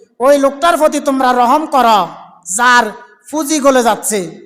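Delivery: ordinary talk, nothing marked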